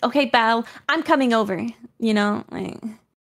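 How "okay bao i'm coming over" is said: put-on assertive tone. Acting out being assertive while saying she is not: put-on assertive tone. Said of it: "that's too assertive".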